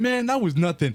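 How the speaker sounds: mock bold cocky brag, high and loud.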